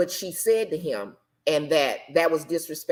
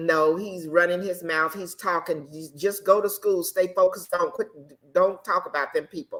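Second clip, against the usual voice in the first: plain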